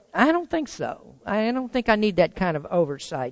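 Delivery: ordinary delivery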